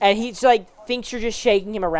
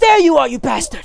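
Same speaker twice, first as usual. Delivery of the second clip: loud, pitched-up, aggressive yell like a thrown punch; 5 semitones higher, 6 dB louder than usual. Narrating a game, voicing a man who spots the player grabbing the sword, voice like throwing a punch. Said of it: "he like makes a noise like he's trying to punch you".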